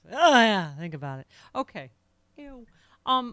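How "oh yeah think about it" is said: put-on sinister, skin-crawling, creepy, suggestive delivery. Mocking how a speaker in a played clip sounded: imitating a creepy tone. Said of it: "he sounds like he had a little".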